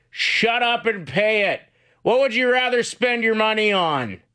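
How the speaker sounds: blunt, very high shout. Retelling a father's advice shouted from two rooms over: imitating a yelling dad. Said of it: "And he just yells".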